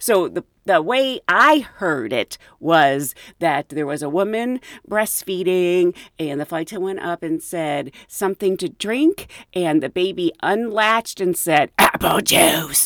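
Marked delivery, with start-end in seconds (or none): 11.8-12.9 rough, creaky, demon-like voice. Retelling a story of a breastfeeding baby answering a flight attendant, demonic voice. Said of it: "Kind of like in this demonic voice".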